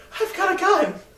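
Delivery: very high-pitched, fearful, scared blurt. Retelling a tv show clip of a character with a gun: imitating someone afraid. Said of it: "he was afraid".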